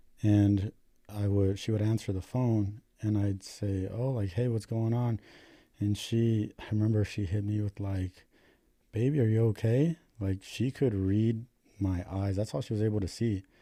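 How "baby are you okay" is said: mock caring tone, exaggeratedly caring. Retelling what she asked him when answering the phone, imitating a caring tone. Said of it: "in like the most caring tone".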